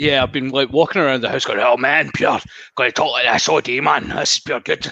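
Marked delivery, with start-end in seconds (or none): 1.6-4.9 put-on full-on, laid-on broad Glaswegian accent. Retelling walking around the house talking all day, speak in a Glaswegian accent. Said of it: "proper G'ing myself up into Glaswegian again".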